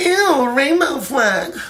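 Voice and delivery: put-on very high, loud, grossed-out little-kid voice.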